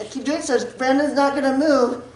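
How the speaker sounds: loud, squeezed, strained voice. Being squished under a heavy mount during a demonstration, strained voice. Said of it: "you can tell that my voice is really strained".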